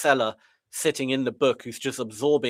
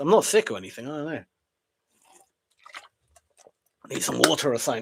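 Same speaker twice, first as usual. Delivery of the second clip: hoarse, raspy voice. Noticing they are starting to lose their voice, speaking in a raspy voice. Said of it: "Can you hear that raspiness?".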